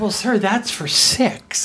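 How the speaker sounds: mock incredulous, disbelieving tone. Retelling what the waiter said when asked for a bigger table: imitating an incredulous tone. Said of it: "with incredulousness in his voice".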